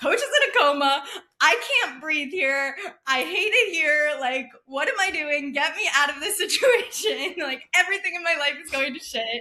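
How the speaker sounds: mock hysterical, tearful outburst in high crying voice. Retelling a message sent to a friend while imitating own hysterical crying. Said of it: "hysterically crying".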